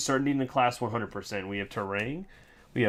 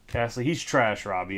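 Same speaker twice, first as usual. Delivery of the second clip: ordinary delivery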